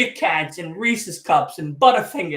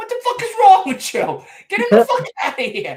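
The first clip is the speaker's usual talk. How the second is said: mock angry yelling, higher and louder; 13 semitones higher, 5 dB louder than usual. Retelling yelling at a wrestler who spat on the crowd: retelling a scream. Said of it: "I screamed out".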